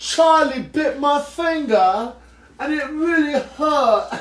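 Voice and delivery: thick, rough, dirty working-class British accent, pitched high. Describing a favorite British accent, the speaker demonstrates the dirty British accent. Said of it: "My favorite British accent is like the dirty one".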